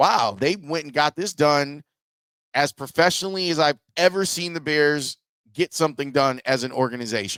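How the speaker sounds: normal talking voice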